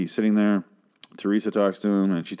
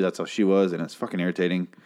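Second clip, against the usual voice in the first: ordinary talk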